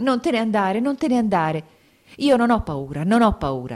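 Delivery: pushed out high and loud. A woman speaking to her mother and Elisaveta Petrovna, said hurriedly. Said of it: "diceva in fretta".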